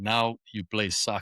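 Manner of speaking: put-on heavy Greek accent, firm and plain. Recalling a childhood memory, the speaker quotes their father, imitating his greek accent. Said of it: "in his in his Greek accent".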